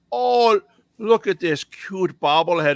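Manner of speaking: put-on heavy Minnesota accent, high, slow and drawn out. Retelling what a woman said at garage sales, big Minnesota accent. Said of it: "they had the big Minnesota accents".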